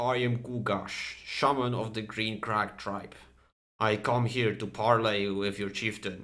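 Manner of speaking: guttural, low orc voice from the throat. Narrating a game, voicing an orc shaman who comes to parley: booming guttural Gugash voice. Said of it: "this booming voice, this guttural, mm, guttural low tone of, of an orc".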